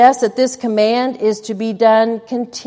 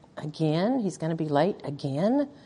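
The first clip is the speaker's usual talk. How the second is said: muttered under breath, quieter, lower and slower; 6 semitones lower, 12 dB quieter than usual. Demonstrating a reaction to a husband calling to say he'll be late, muttered under breath. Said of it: "under your breath you say".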